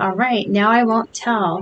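ordinary delivery

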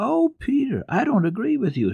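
keen, eager, very high-pitched voice. Heidi answers Peter, who says learning to read is no use, eager. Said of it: "said Heidi eagerly".

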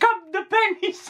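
high, slow, mocking Catalan accent.

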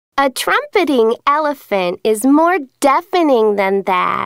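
plain

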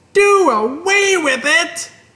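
very high shriek, long, slow, drawn out. Narrating a story, a character answers her mother at the table, shrieking. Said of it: "shrieked Fern".

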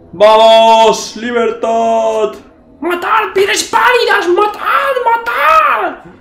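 very high, loud, shouted character battle cry. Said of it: "Yo, yo le pongo la voz".

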